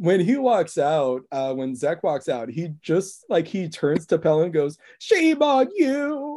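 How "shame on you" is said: very high, sorrowful, mournful, put-on lament. Retelling Zek walking out and turning to Pell: mock-mournful Zek impression. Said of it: "like super sad and like almost like mournful".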